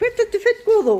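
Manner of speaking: high-pitched, puzzled, doggy character voice.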